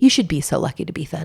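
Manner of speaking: very gentle, tender delivery. Retelling what a woman on a bike said: imitating a very gentle voice. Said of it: "very gently".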